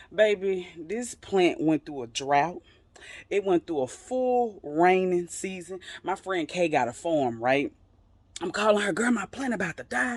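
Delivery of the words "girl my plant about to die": alarmed, desperate, panicked cry. Retelling calling a friend for help: retelling own panicked words. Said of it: "I'm panicking".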